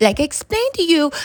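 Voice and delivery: patronizing, condescending, talking-down delivery. Imitating how a woman sounded while explaining a typo, mock-condescending tone. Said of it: "I'm trying to actually talk like she sounds in that disgusting condescending".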